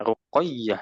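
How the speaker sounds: ruqayyah with the ya syllable stressed and pressed. Practicing name pronunciation, saying ruqayyah with stress on ya. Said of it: "ya-nya ditekan".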